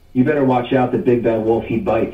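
ordinary talk, nothing marked

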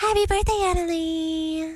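creepy, feminine-sounding voice. Urged to say it, a speaker wishes Annalie happy birthday in a creepy Anna Faris impression. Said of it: "That's creepy".

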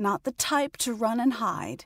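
plain

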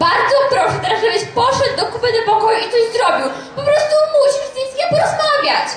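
very agitated, fed-up, upset, pitch climbing high. Speaker urging the father to go talk to his son, upset. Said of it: "jestem strasznie zdenerwowana".

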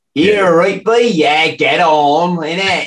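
put-on high-pitched, odd teenage West Country lad accent. Recalling how the teenage lads the speaker grew up with talked, imitating their weird accent. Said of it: "started to take on this weird accent".

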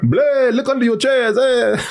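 vampire voice with a Mexican accent. Addressing everybody, the speaker slips into a character: Mexican Dracula voice. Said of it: "A Mexican Dracula is what I'm doing".

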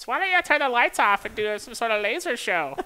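squeaky, very high, loud fan voice. Imitating fans who asked during the season about the lights, questionable fan voice. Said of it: "That's my questionable fan voice".

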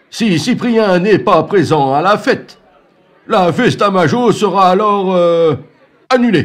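very high, loud, slow, booming rooster voice. Storyteller voicing the rooster making his declaration to the villagers: rooster character voice. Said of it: "La déclaration du coq met tout le monde en émoi".

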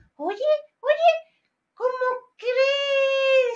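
puppet voice, pitched high.

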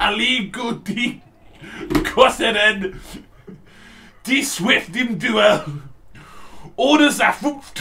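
exaggerated aggressive German. Reading a game's German blurb aloud to prove the language is aggressive: mock-aggressive German reading. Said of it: "So you can all see how over the top that language is".

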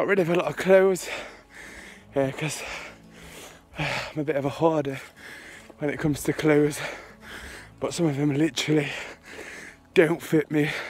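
out of breath, winded. A speaker telling viewers about their day, out of breath. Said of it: "I'm out of breath".

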